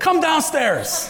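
loud, high yelled call. Retelling yelling at her to come downstairs from her room: retelling a yell. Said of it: "I yelled at her".

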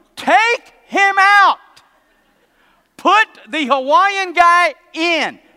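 booming, loud, shrill, high-pitched yell. Retelling how he yelled at Saban in front of the TV, retelling yelling at the TV. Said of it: "I'm yelling at Saban going".

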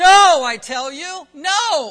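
very loud, forceful, emphatic "no". Reading verse three aloud the way the original means it, most emphatic no. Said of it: "the most emphatic, strongest no that you could possibly find in the original. So let me read it that way".

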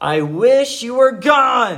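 mock furious yell, loud, high, drawn out. Retelling yelling at siblings after losing temper: imitating own angry yell. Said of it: "I yelled out at my siblings".

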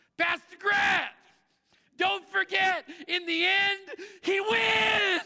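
very loud, very high, full-throated top-of-lungs yell. Pastor grant retells a man yelling to him in the rain, retelling a yell at full volume. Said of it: "he yells at the top of his lungs".

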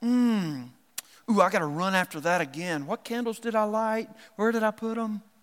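put-on super-spiritual fussing. Acting out an overly spiritual churchgoer to make a point: sarcastic, mocking hyper-spiritual person. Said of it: "I'm being a little sarcastic there".

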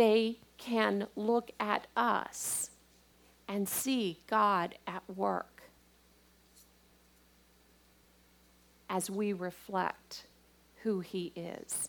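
drawn out, very slow, each word weighted. A speaker wants a point to sink in: said very slowly. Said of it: "I'm saying that very slowly".

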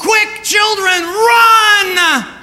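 very high scream, drawn out. Retelling a mother warning her children about baby skunks: retelling a scream at full voice. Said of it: "screamed at the top of her voice".

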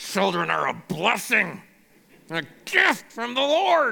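forced out through gritted, clenched teeth. Showing how people quote this verse when kids are stressful, through clenched teeth. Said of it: "we tend to quote it through clenched teeth".

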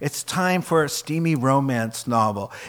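ordinary delivery

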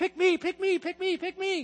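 put-on very high, eager, begging schoolyard child voice. The speaker asks listeners to picture a schoolyard kid waiting to be picked: schoolyard kid voice. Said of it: "picture the schoolyard kid going".

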